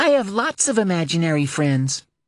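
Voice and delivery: bright, sing-song, perhaps forced cheerfulness. Reading a story aloud, a child dancing in circles: cheerful, possibly forced. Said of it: "her cheerfulness was real or forced".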